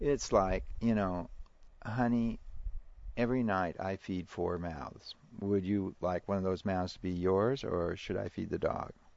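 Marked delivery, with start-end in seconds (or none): none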